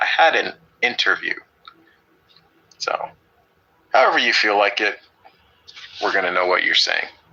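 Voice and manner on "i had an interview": super slow, deliberate, drawn-out delivery. Showing how a sentence sounds when spoken differently; speaking super slow. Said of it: "if I was speaking super slow".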